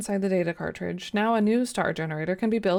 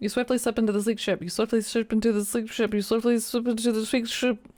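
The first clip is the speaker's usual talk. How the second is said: rapid, quick delivery, getting faster. Trying to say a tongue twister three times fast, rapid tongue-twister delivery. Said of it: "Try to say that three times fast".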